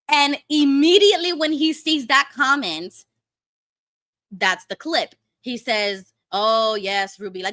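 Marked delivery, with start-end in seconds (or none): 6.3-7.4 thick, dripping, openly mocking, very sarcastic delivery. Retelling a streamer's reply to a chat comment: imitating a sarcastic reply. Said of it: "very sarcastically".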